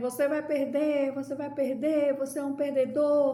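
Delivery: high, jeering crowd cry, called out. Imitating a crowd telling the listener they will lose: imitating people shouting. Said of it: "tem gente gritando assim".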